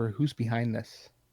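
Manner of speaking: whispered speech. Voicing a character who leans in to a captive's ear: whisper. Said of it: "and just kinda whisper".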